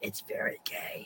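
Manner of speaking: very quiet, barely audible, breathy whisper. Recounting a video where Natalie Portman is asked about the movie, Natalie Portman whispering. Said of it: "Natalie Portman just whispers like".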